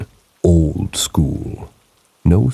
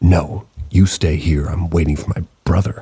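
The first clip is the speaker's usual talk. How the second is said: very angry, hostile, cross tone. Retelling what a woman on the platform said: imitating her angry reply. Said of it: "She looks at me and says very angrily".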